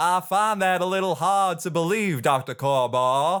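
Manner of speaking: put-on Southern accent. Trying the same written line another way, in a southern accent. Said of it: "But it could just as easily be Southern".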